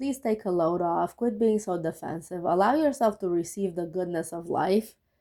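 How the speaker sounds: ordinary delivery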